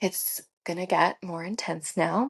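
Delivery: imitated whisper. Retelling what the midwife said during labor: imitating a whisper. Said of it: "she whispers to me".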